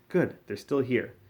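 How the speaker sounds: plain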